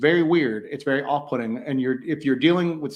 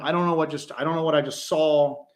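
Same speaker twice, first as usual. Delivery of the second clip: ordinary talk, nothing marked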